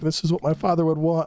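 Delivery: teary-eyed, welling-up, near-crying voice. Retelling a game scene where Nada speaks with a tear in his eye: tearful Nada impression. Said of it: "a tear in his eye".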